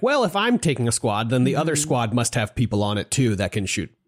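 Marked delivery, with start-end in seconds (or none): none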